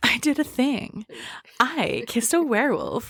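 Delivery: high, swooping, overdone, showy narrator voice. Imitating how the audiobook narrator read the line: imitating an over-the-top pizzazz reading. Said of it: "it's too much".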